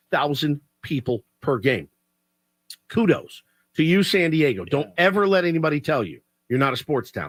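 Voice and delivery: plain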